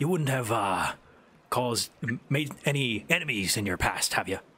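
hushed whisper. Voicing a captain who leans in to ask about past enemies: whispering. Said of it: "leans in and whispers".

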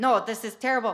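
loud, failed put-on Mexican accent. Retelling the woman teaching tortillas rejecting them, in a bad Mexican accent. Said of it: "I can't do my Mexican accent".

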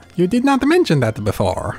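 sassy sing-song, swooping up and down. Reading game dialogue aloud during play: sassy Mario voice. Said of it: "I'm going to sassy Mario".

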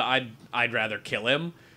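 ordinary delivery

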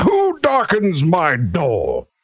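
very slow, high, sing-song, swooping, drawn-out call. Voicing the lawyer answering a knock from inside: voicing the lawyer calling out. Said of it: "you hear from inside being like".

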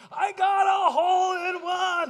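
very slow, high, loud, drawn-out ecstatic scream. Retelling a golfer announcing a hole in one: imitating ecstatic screaming. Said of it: "He was so ecstatic, screaming".

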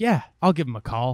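ordinary talk

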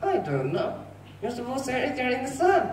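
high, quick ventriloquist puppet voice. In a ventriloquist sketch about the days of creation, the dummy answers: ventriloquist dummy voice. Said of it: "I'm not a human. I'm a dummy".

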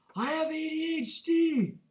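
very high, loud, shrieked, blurted scream. Retelling what someone screamed while others waited, imitating someone screaming. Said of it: "he screams".

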